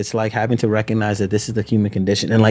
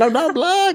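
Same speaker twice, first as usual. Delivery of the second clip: put-on mimicked child yell, much higher, slower. A father retells his daughter's protest, imitating a child yelling. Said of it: "just yelling".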